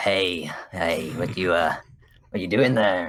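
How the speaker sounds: slow, deliberately creepy put-on stranger voice. Recalling creeping out someone in the game, in a put-on creepy voice. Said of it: "put on like a creepy voice".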